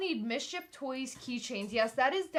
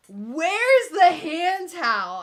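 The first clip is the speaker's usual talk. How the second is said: mock, very loud, slow, slurring drunk voice; 5 semitones higher, 12 dB louder than usual. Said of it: "he's slurring his words".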